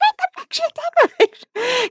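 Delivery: high, frantic, urgent, pleading scream. Retelling how Alfie screamed during the final boss: imitating Alfie screaming. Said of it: "Alfie was screaming at me like".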